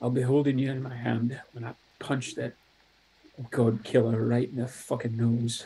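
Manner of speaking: whispering through tears, tearful. Voicing a character kissing a coin on a bracelet: whispering through tears. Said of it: "just sort of whisper to it".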